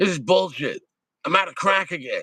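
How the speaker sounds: put-on angry woman voice. Imitating a woman who is angry about being out of crack: imitating an angry woman. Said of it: "a crackhead woman just, like, angry?".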